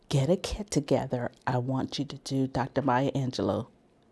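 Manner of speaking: secretive, hushed, very quiet half-whisper. Retelling what the producer half-whispered about the job: imitating a half-whisper. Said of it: "she whispers to me".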